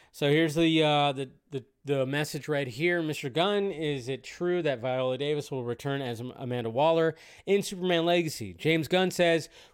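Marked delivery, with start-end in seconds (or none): none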